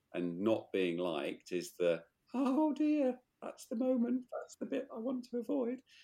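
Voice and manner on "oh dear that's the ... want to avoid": frightened, very high little squeaking voice. Talking about the moment of not being liked: scared voice. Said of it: "is that your scared voice?".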